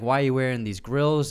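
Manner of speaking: usual speaking voice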